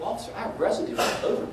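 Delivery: ordinary delivery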